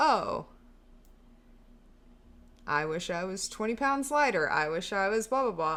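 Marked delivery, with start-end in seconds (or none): none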